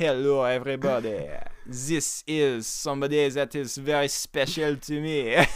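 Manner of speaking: put-on French accent. Introducing someone special to everyone on a podcast, in a put-on French accent. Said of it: "A great French accent".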